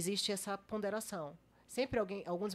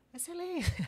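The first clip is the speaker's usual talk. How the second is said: play-acted, very high, cried out as a shout; 10 semitones higher than usual. Retelling how she arrived at the court session: imitating herself shouting. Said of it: "a louca chega gritando".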